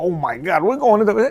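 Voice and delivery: frantic, panicked, flipping-out delivery. Imitating an airplane captain during turbulence: imitating a panicking pilot. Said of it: "He could be flipping out over there".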